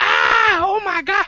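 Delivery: put-on very high, long, drawn-out child's shriek. Retelling how a little kid screamed on seeing him: imitating a kid screaming.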